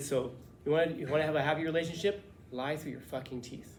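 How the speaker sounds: ordinary talk, nothing marked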